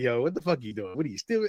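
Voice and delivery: low, hushed scolding tone. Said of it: "if you was one of my kids, I'd be like".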